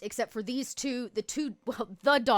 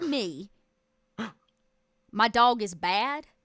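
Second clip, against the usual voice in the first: put-on American Southern accent; 4 dB louder than usual. Playing a character who confronts Rudy about her dog: southern accent. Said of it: "she had a southern accent".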